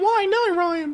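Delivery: fake, made-up, super high-pitched voice. Voicing an imagined question to oneself: put-on super high voice. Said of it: "you shouldn't have a super high voice".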